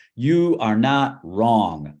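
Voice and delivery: emphatic, very slow, deliberate delivery. Retelling how they open a talk to students: saying it loudly. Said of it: "I say it real loud".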